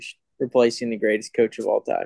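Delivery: normal talking voice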